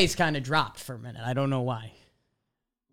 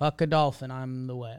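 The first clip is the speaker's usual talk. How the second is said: ordinary talk, nothing marked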